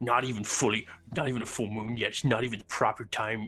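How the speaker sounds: put-on grumbling, complaining tone. Voicing a spectator who complains the moon is not full: voicing a grumbling onlooker. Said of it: "that guy who's like".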